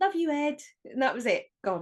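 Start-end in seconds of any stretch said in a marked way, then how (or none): 0.0-0.6 grand, theatrical, showy, dramatic delivery, pitched up. Retelling a lift scene, the goodbye line: imitating Liz's dramatic goodbye. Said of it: "big dramatic goodbye from her".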